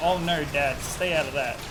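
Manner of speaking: ordinary delivery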